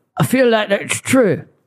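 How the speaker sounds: slow, strangled, choked-sounding voice. Trying out an impression of a podcast guest: Rufus Rice impression. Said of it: "That was my Rufus Rice impression".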